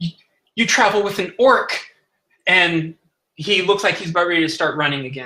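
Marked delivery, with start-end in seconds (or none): 0.0-1.8 completely terrified voice, high and stammering. Describing a scene, voicing a character looking all around: terrified. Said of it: "like completely terrified".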